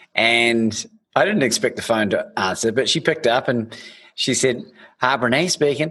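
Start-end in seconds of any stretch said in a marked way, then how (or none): 5.0-6.0 put-on Southern drawl. Speaker retells phoning a speaker who picks up, doing a Brené southern drawl impression. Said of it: "and my best southern drawl".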